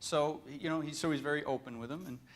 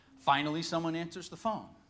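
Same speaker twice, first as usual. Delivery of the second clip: usual speaking voice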